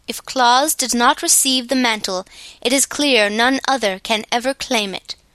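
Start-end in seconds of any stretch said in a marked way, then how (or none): none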